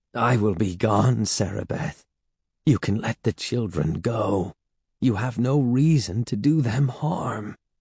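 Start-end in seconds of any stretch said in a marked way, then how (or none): none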